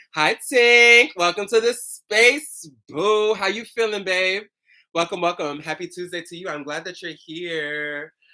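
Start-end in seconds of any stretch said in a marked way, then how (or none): none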